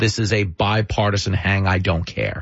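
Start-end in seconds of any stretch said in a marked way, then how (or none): none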